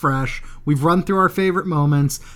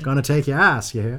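sinister, laid-on, put-on Maine accent; 4 semitones lower than usual. Agreeing that Maine accents are weird, the speaker tries a creepy Maine accent. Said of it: "everything is creepier with a Maine accent".

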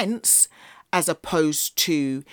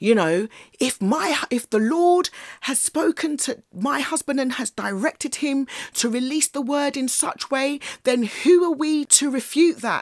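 put-on raised voice, pushed very high; 10 semitones higher than usual. Retelling how the man's wife interjected against him, retelling a raised voice. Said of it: "she raised her voice and said".

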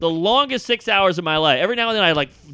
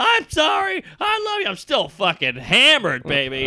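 put-on drunken, swooping, sing-song shouting; 6 semitones higher than usual. Retelling oversleeping and getting into an Uber, acting out a drunk yell. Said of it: "I am yelling at the Uber like".

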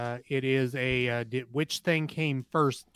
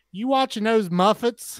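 put-on very high, very loud, shrill grandma voice; 9 semitones higher, 9 dB louder than usual. Recalling a friend's grandma walking in on the Muppet Show, imitating a friend's grandma. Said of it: "she'd walk into the room and say".

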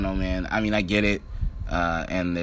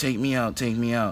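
higher pleading, begging tone. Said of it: "basically, like, begging him".

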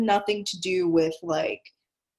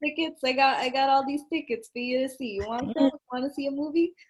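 put-on Italian American accent; 5 semitones higher, 4 dB quieter than usual. Describing a movie's characters, acting out the scalper in an italian american accent. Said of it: "talk like that".

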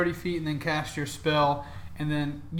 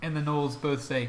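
ordinary delivery

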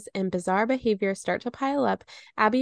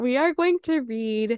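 talking through a yawn; 3 semitones higher than usual. Introducing the next book to a co-host, speaking while yawning. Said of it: "sorry, I'm yawning".

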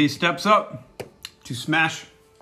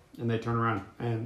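ordinary talk, nothing marked

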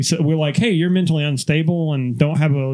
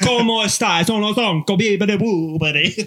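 high, clueless-sounding fake Italian accent; 5 semitones higher than usual. Playing someone who's never heard the accent before, speaking in a fake Italian accent. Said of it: "someone who's never heard the accent before".

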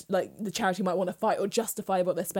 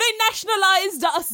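fake Jamaican accent, higher and louder; 12 semitones higher, 7 dB louder than usual. Retelling a speaker's line at a talk: imitating a put-on jamaican accent. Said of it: "Why did you do a Jamaican accent?".

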